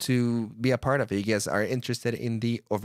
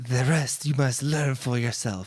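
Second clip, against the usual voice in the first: put-on calm robotic monk voice. Closing an episode without music, doing an impression of Zenyatta. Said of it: "I will try to do my best impression of Zenyatta".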